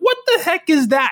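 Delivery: very high, incredulous voice.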